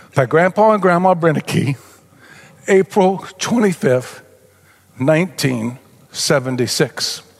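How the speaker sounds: tearful, choked-up voice catching with tears while reading. Reading the dedication in a childhood Bible, tearing up. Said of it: "I'm going to tear up, sorry".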